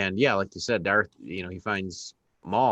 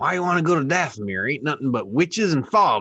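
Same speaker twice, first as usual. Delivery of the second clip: put-on pirate voice, higher and louder; 7 semitones higher, 5 dB louder than usual. Retelling a scene where a space junker answers a request: imitating the space junker pirate. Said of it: "and he's like".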